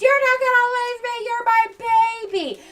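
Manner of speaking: mock, very high, shrill meltdown-style yell. Recapping a scene, retelling Jackie yelling up from the ground floor. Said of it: "She just yells at her from the ground floor".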